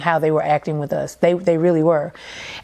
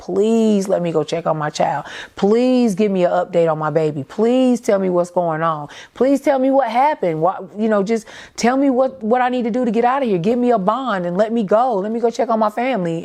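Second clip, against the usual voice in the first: acted desperate screaming and pleading; 4 semitones higher than usual. Woman recalling begging officers to let her check on her child, retelling desperate screaming, begging. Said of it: "I'm screaming at the top of my lungs. I'm begging them".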